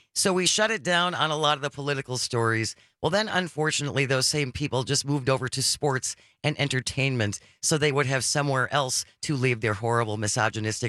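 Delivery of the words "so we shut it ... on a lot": plain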